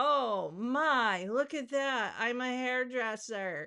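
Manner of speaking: slow, heavy sarcasm laid on thick. Showing an old page from two thousand eight: heavy sarcasm. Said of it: "I say that with so much sarcasm".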